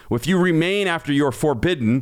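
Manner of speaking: ordinary delivery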